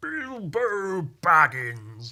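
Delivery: sing-song, high, loud, swooping, stretched-out actor voice. Doing a quick impression of the actor who plays Gandalf. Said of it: "my impression of that guy".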